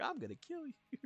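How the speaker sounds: very high cartoon-style character voice. Retelling saying a line to people in VR chat: Sonic the Hedgehog voice. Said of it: "in Sonic's voice".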